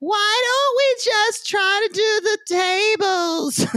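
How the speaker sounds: very high, whiny, drawn-out voice. Speaker quoting her suggestion about the tables, imitating a whiny voice. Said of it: "It's just delivered in that whiny voice".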